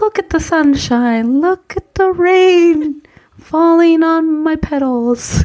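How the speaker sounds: talking like a flower, rain stretched. Playing a talking flower in a game of voices: talking like a rose. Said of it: "I'd speak like this".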